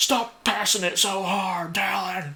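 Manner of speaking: very slow, high, dragged-out yell. Retelling teammates yelling at the passer: imitating teammates yelling. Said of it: "Start screaming his name".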